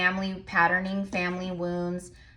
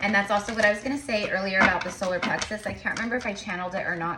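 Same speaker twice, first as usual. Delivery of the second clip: rushed, rattled-off fast talk. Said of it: "I know I'm talking fast".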